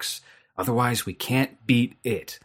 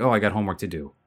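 mock rushed, flat, characterless line reading. Speaker criticizing a dub's actors, imitating rushed line reading. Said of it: "they say it like literally at that speed".

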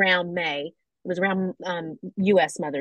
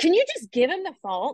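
put-on very high, loud, frantic, freaked-out raised voice; 10 semitones higher than usual. Retelling asking a teenage girl to hand over her phone, retelling getting really loud. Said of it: "I got really loud and like freaked out".

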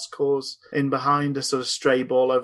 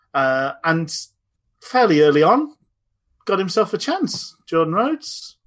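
a touch of Cockney accent, raised; 4 semitones higher, 5 dB louder than usual. Recapping the match to the others, sounding a bit cockney. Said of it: "You sound a bit cockney there".

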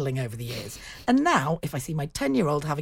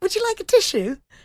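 mock very high, loud, breezy and bright; 6 dB louder than usual. Retelling offering a tissue to a loudly sniffing man sitting opposite, put-on upbeat tone. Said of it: "In a very upbeat way".

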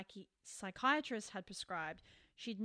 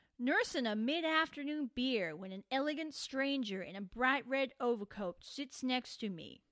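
raised, attempted put-on American accent; 3 semitones higher, 6 dB louder than usual. Quoting a carpenter's own words directly, in an american accent. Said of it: "I'm going to try and do an American accent".

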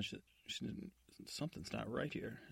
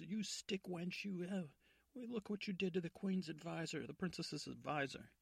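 furious, high, angry screaming; 7 semitones higher than usual. Retelling a play, the speaker acts out the guard captain at the stepmother; acting out angry screaming. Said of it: "And he's screaming at the stepmother".

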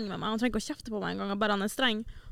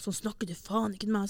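mock displeased, unhappy tone; 3 dB quieter than usual. Retelling how a man answered back when he was not pleased: retelling a displeased retort. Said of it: "han var ikke fornøyd".

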